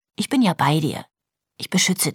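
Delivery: ordinary delivery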